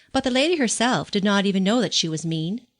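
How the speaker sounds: ordinary delivery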